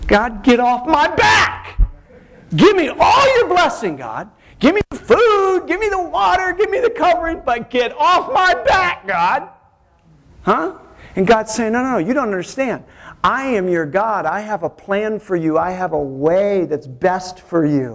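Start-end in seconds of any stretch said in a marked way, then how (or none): 0.1-9.5 very high-pitched, yelling, protesting voice. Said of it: "You can almost hear him yelling".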